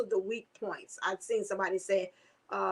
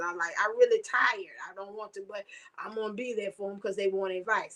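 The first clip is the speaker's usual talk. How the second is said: normal talking voice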